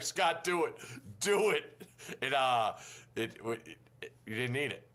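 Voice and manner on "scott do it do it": put-on, high-pitched, drawn-out urging shout. Retelling someone watching the show at a hotel: imitating Reese yelling at the TV. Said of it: "yelling at the T V".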